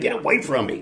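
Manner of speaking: acted-out mild, high-pitched small shout. Retelling a match where a partner kept grabbing him: retelling screaming at someone. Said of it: "and I'm screaming at him".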